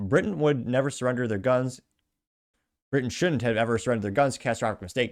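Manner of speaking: usual speaking voice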